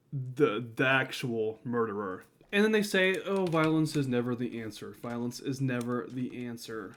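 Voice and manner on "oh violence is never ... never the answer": ordinary delivery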